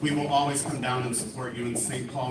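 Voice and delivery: ordinary talk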